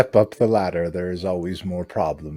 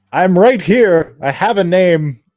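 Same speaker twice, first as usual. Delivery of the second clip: very high, booming, drawn-out, slow and belted; 10 semitones higher, 9 dB louder than usual. Voicing Alan cutting in on another character: Alan voice like Owen Stone. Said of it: "You sounded so much like Owen Stone".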